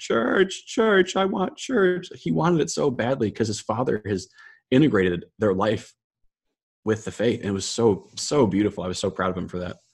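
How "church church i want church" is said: put-on very high, drawn-out, screaming child's crying wail. Retelling how the speaker's nephew wanted church on Easter, imitating Brian crying and screaming. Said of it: "crying around the house, screaming like".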